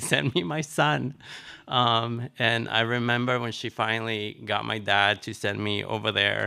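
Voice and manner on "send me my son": acted firm, insistent, scolding tone. Retelling a parent demanding a child be sent: imitating a yell. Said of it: "yelling at him".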